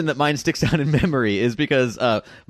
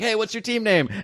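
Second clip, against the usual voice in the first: high, loud called-out yell; 8 semitones higher than usual. Retelling another team calling across the street: imitating someone yelling. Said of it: "they yelled out".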